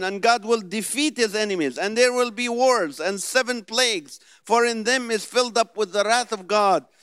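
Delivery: put-on heavy Middle Eastern accent. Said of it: "don't read these verses in this accent".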